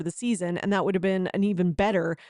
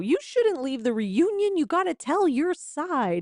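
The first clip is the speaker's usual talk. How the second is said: mock manipulative, coaxing, pitched-up persuasive voice; 8 semitones higher than usual. Retelling someone pressuring a cast member to stay: imitating Andy manipulating someone. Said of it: "Andy now trying to, like, manipulate somebody into joining the show".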